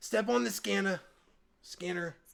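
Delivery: put-on very high, loud old woman's voice. Retelling what an old lady said at the scanner, in an old lady voice. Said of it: "I had her voice before".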